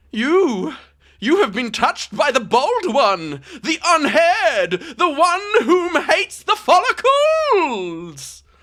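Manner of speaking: very high-pitched dragon character voice. Voicing the dragon, who speaks to a player after being hit: mustache dragon voice. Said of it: "he looks at you and he goes".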